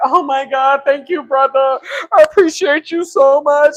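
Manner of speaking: mock crying, slow, tearful, overwhelmed and gushing. Acting out how they would have thanked a stranger: mock crying while thanking. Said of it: "I probably would have started crying, like".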